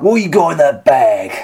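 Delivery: gruff put-on voice. In a recreated confrontation, the challenger questions Atlas, sounding like Ray Winstone. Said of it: "You sound like Ray".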